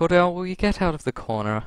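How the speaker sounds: calm, even, slightly high tone. After setting the mirror down, calling to someone in the corner, in a calm tone. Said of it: "let's say in quite a calm tone".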